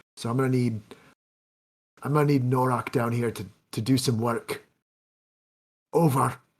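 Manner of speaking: whispered voice. Reporting to the party over a walkie-talkie near a guarded door: whispering over a walkie-talkie. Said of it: "whisper over my walkie-talkie".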